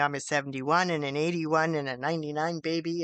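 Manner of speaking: plain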